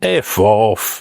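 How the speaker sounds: put-on thick, broad Glaswegian accent, laid on. Retelling the father's reply to doctors' bad news: broad Glaswegian accent. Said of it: "My dad just went broad Glaswegian".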